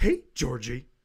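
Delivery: put-on creepy, sinister clown voice. Describing a horror movie sewer scene, the speaker does the creepy clown voice. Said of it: "when he's like".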